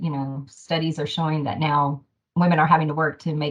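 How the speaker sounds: ordinary talk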